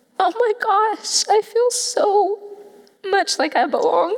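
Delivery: high, slow emotional voice. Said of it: "I'm gonna get emotional again".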